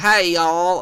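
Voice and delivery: teasing, mocking Southern US accent. Describing a teammate, the speaker does a mocking Southern American accent. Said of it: "this like like Southern girl".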